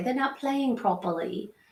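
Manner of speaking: cartoonish, soft, high Australian accent. Parent quoting what the dogs always say on a kids' show, Bluey-style Australian accent. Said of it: "I say it in an Australian accent".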